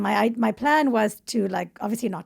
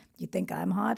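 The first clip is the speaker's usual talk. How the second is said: put-on deep American accent, quieter, slower; 2 semitones lower, 7 dB quieter than usual. Acting out what a guy said back to you, in a deep American accent. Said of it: "He had this Amer- deep American accent".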